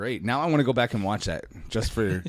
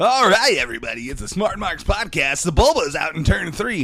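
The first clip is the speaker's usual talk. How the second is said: sportscaster call like a race commentator, pitched up; 7 semitones higher, 5 dB louder than usual. Podcast host calling a race moment, Episode One podrace announcer voice. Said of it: "talking like the announcer from uh, the pod race scene".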